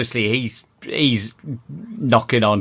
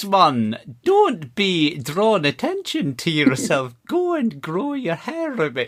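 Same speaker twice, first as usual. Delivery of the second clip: terrible put-on Scottish accent, high, sing-song; 6 semitones higher than usual. Joking about a bald man's shiny head: worst Scottish accent. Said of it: "That is the worst Scottish accent I've ever heard".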